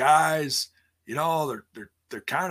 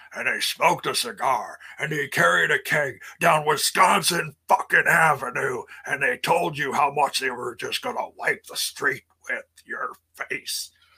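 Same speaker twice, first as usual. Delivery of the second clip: put-on gruff, rough, throaty old-school wrestler voice; 3 dB louder than usual. Speaker recalls the rough local wrestlers and how they talked: imitating a rough wrestler. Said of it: "they talked like this".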